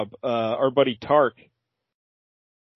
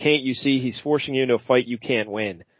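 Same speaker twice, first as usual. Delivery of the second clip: ordinary talk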